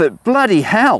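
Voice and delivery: excited and shocked. Reacting to an unexpectedly good find while cleaning: excited and shocked. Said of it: "You can hear by the excitement in my voice".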